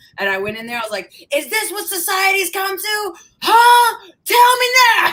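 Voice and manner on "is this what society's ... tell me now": shrill, very high, slow, drawn-out raised yell. Retelling yelling at everybody in Coffee Bean: imitating own past yelling. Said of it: "I yelled at everybody in Coffee Bean".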